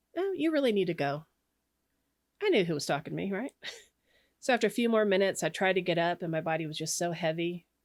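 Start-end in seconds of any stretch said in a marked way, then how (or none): 0.2-1.3 serene, utterly calm male voice. Unable to get off a pillow, the speaker retells a voice in their head: quoting a calm male voice. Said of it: "this very calm male voice says to me".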